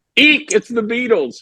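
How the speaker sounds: mock, high-pitched, giddy squealing scream. Retelling a scream heard in their head on sitting down: imitating an inner scream. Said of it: "I hear in my head a scream".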